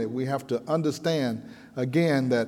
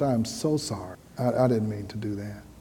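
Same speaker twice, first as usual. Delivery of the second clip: voice dropped down low and soft; 4 semitones lower, 4 dB quieter than usual. Retelling her apology to a man who walked away, lowered voice. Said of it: "I lowered my voice".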